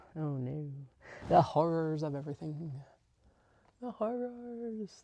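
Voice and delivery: sarcastic, theatrical, fake dismay and horror. Joking about committing to more sewing projects: sarcastic mock horror. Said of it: "That is sarcasm".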